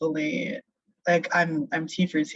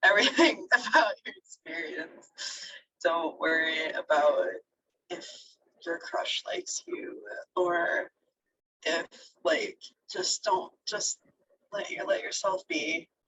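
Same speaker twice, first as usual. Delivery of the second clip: soft, tearful speech with slight crying; 3 semitones higher, 5 dB quieter than usual. Giving encouragement to listeners, the speaker is crying a little while talking. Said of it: "I'm crying a little bit".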